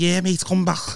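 put-on Liverpool accent. Acting out a manager's friendly reply to a request about returning after college, in a scouse accent. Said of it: "in his Scouse accent".

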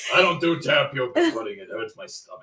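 put-on deep gravelly old man voice. Describing how a friend acts out being old, in a deep grizzly old man voice. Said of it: "this deep grizzly old man voice".

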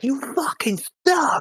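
mock, very high, shrill, furious jeering. Retelling how a Yankees fan went after an Astros fan: imitating a fan heckling angrily. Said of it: "I saw a Yankees fan getting after him, like, really bad".

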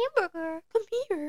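very high-pitched, sing-song coaxing call. Showing how anyone could call a dog: high-pitched voice calling a dog. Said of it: "say anything in a high-pitched voice at your dog".

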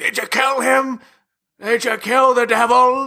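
mock, very high-pitched, shouted yelling. Discussing a film, imitating Loomis yelling.

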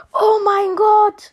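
drawn-out, high joyful scream.

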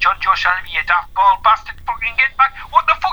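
acted, high, rising, yelling and bawling scream. Recounting watching a match and yelling at a player, retelling screaming and shouting. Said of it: "screaming and shouting like".

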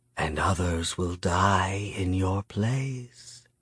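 soft, gentle, slow delivery with drawn-out die. A character threatens the narrator through an opened door: softly. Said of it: "Miyamune said softly".

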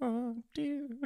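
put-on little old lady voice. Joking about sitting in front of the TV, in a fake old lady voice. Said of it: "Just doing fake old lady voices".

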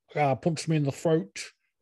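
put-on Manchester accent. Imitating Tyson Fury after wishing to do his voice: Tyson Fury impression. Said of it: "His fucking Manchester fucking dialect".

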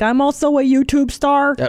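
put-on Saskatchewan accent. Speaker imitates a TikTok weatherman, doing Frankie's Saskatchewan accent. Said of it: "I'm doing his accent".

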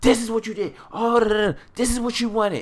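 shrill, very high-pitched, furious rant. Retelling a scene, imitating a furious woman. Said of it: "like she was so fucking pissed".

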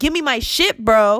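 loud, high-pitched, heated angry delivery. A woman shows how she asks for her rights; acting out an angry demand. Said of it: "when I talk like this".

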